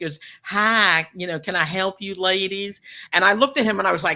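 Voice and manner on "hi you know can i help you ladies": put-on very slow, drawn-out little voice with Texan accent. Retelling a man who suddenly spoke up while they stood in line: little Texan accent. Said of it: "comes out with his little Texan voice".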